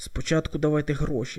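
ordinary delivery, nothing marked

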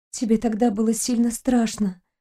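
hushed whispering. Reading a story, a girl speaks to the captain about the war: whispered. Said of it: "прошептала девушка".

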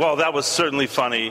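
ordinary talk, nothing marked

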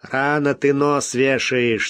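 mocking tone. Answering a companion's fears about having to eat the dogs: mocking. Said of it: "насмешливо сказал Смок".

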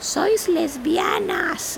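put-on high, slow little Spanish girl's voice.

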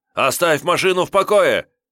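jittery, nervous, menacing yell, pitched very high. A young man tries to stop a car being taken, with a nervous threatening shout. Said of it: "сразу перешел на угрожающий тон, нервно крикнул".

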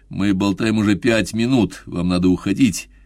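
plain reading voice

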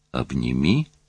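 puzzled, bewildered, uncomprehending tone. A man answers the woman pleading with him to hold her, bewildered. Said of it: "повторил он с недоумением".

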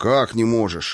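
ordinary delivery

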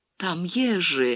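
shaky, trembling, quavering voice. A woman speaks to the narrator in a trembling voice. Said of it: "дрожащим голосом произнесла она".

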